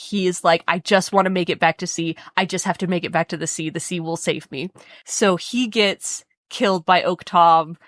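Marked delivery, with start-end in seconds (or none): 0.7-4.7 put-on frightened, scared pleading voice. Retelling a fleeing character's words: imitating scared Grey Patch. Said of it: "He's scared".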